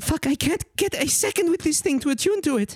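very high-pitched, exasperated, frustrated voice. Voicing the horned woman looking up: in-character frustrated line. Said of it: "she looks up at you and she says".

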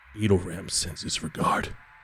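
hushed whisper, close in. Voicing an attacker who stabs a character: whispering into ear. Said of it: "somebody whispers into your ear".

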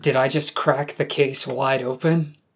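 normal talking voice

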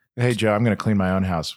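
ordinary talk

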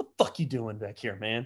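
play-acted, instantly irritated, fed-up, put-out tone. Retelling a grumpy bouncer who sees someone come back: imitating Howard, irritated. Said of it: "He's just immediately irritated".

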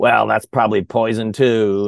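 acted, snide, sarcastic offhand tone. Retelling a man's remark at a drinking fountain: imitating a sarcastic remark. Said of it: "he had a real kind of sarcastic attitude".

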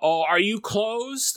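mock drunk kid voice. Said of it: "one of these drunk kids walks up".

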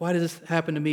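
usual speaking voice

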